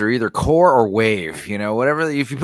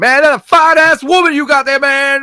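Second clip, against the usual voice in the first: very high, loud, shrill hollered yell; 13 semitones higher, 6 dB louder than usual. Retelling how homeless guys called out across the street: imitating homeless guys yelling. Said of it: "homeless guys be yelling across the street".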